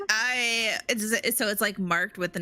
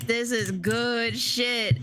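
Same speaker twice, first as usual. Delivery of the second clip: put-on very slow French accent sliding into New York accent. Imitating a character's line, French accent slipping into New York. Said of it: "drops her French accent a little bit".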